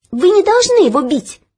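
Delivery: firm, resolute, very high, loud insistent tone. A girl confronts an overseer while the mirror workers crowd around, firmly. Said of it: "твердо сказала Оля".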